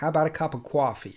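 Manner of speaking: put-on New York accent. Showing off their own version of a New York accent: put-on New York accent. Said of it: "That's my New York accent".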